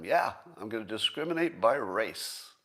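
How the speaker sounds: put-on boastful, proud tone. Retelling how he said it, as if expecting praise: imitating a proud boast. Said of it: "he said it like everybody should be patting him on the back".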